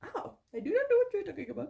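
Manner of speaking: put-on Indian accent, high-pitched. Taking a second try at mimicking the accent, in an Indian accent. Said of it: "That's better. That's way better than what I was doing".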